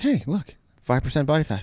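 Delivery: proud, bragging, swaggering show-off voice. Retelling what Brian Kozma said after a workout, imitating Brian Kozma. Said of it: "That's a good impression".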